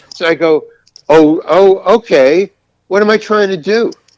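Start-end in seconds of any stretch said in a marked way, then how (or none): 1.0-3.9 drawn-out sassy retort, pitched up and slow, attitude. Retelling a reply to the director: imitating own attitude back. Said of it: "I give him an attitude back".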